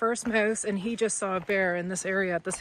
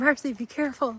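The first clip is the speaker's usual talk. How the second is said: put-on timid voice, much higher in pitch; 3 semitones higher than usual. Retelling a walk to see bears, the speaker quotes Rose warning Marcy: imitating Rose's timid warning. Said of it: "Rose was kind of timid".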